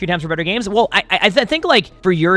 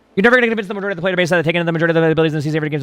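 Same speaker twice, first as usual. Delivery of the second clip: reading aloud, much faster. Showing how you just scan, reading a passage aloud really fast. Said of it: "So I just read really fast".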